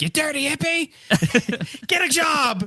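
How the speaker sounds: very high, squeaky cartoon character voice. Answering with a Cartman line, in a Cartman voice. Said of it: "Why did you sound like Cartman from South Park?".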